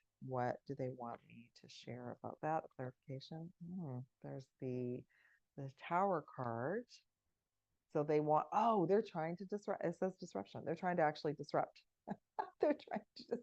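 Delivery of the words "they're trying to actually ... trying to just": fast, swooping speech, laughing through the words. Tarot reader explaining a drawn card to viewers, giggling. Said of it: "I'm giggling".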